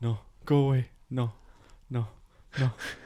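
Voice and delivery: flat, sluggish, slow, soft low-energy voice. Retelling how a man at a table shooed away a bee: imitating slow, low-energy talk. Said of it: "with the same low energy".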